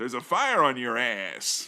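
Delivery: low, convincing, believable put-on American accent. Recounting a scene where Bond sneaks in on a fire truck, Bond's convincing American accent. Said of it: "Bond dropped a very convincing American accent".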